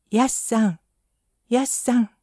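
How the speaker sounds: little, small-voiced calling. Reading a story, the narrator voices Taro calling out in a small voice. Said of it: "と小さい声で呼びました".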